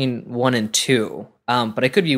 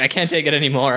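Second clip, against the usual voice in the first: ordinary talk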